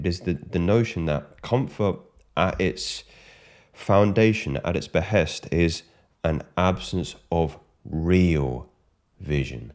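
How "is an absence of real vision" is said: real stretched slow and stressed. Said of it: "I do stress the word real".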